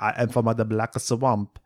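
put-on Spanish accent. Joking about casting, imitating an actor: Javier Bardem impression. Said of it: "Javier Bardem being like".

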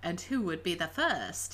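play-acted snide, snarky, cocky sarcasm. Retelling how a detective answered a doctor: imitating a snarky retort. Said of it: "he was all, like, snarky".

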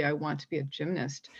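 play-acted bold, confident, firm declarative delivery. Retelling a talk with parents about future plans: imitating own bold statement. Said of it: "I stated very boldly".

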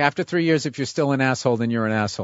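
ordinary delivery

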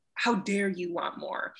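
reproachful, scolding, judgmental voice. Recalling job interviews and the voice inside: mock-judgmental inner voice. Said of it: "the judgmental voice is like".

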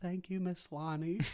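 tiny, small, high-pitched little voice. Recapping a show scene, the speaker quotes his reply in his little voice. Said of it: "In his little voice".

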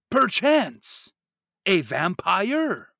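very loud, high, theatrical gothic-style declaiming. Imitating how the actor talks in Bram Stoker's Dracula: the actor's Dracula-film delivery. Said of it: "that's exactly how he talks in Bram Stoker's Dracula".

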